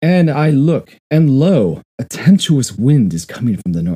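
loud, high, booming, dramatic reading.

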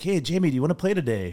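failed South African, Irish-sounding. Retelling Roy's invitation to play, imitating Roy's South African accent. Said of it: "That probably sounded like a leprechaun".

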